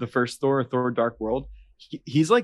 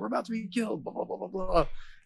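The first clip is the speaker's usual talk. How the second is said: put-on yelling voice, higher; 7 semitones higher, 8 dB quieter than usual. Retelling a movie scene to a friend: imitating Drax yelling.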